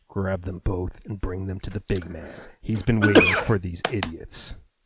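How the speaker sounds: low, rough, gravelly rasp. Narrating an unseen captor ordering the two captives taken away, low, gravelly voice. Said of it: "You hear a low, gravelly voice".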